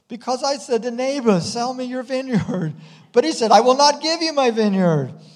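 shrill, very high, loud whining. Reading the king's answer to his wife Jezebel; whiny voice. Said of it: "a little bit of a whine in his voice".

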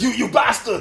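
high, dubbed-movie style voice. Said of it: "Why you just sound Arnold Schwarzenegger?".

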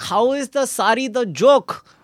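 put-on high, outraged yelling, words drawn out. Retelling how mom screamed at the screen: imitating mom screaming. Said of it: "she's screaming at the screen saying".

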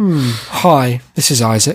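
cold, distant tone. Trying out ways to introduce himself to listeners, cold, distant greeting. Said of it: "turning me down for a date".

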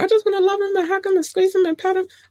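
put-on very high, fast, cartoon little-girl voice. Speaker admits she sounds like the cartoon girl: Animaniacs little girl voice. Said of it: "I sound like the little girl".

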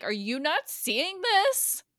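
high, slow, loud yelling.

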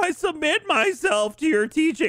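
whiny, very high-pitched, loud voice. Retelling an alternate Star Wars scenario to friends, in a whiny Luke voice. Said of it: "I really like how you nailed the whiny bitch voice".

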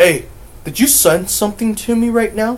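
high, loud voice, sounding rattled.

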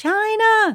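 very high, far-carrying hollered yell. Retelling how a coworker called a name down the hall: imitating a scream down a hall. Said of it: "she screamed down the hall".

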